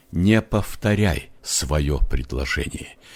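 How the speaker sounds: plain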